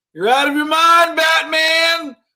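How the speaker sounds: high, loud voice projected outward. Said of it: "says out loud".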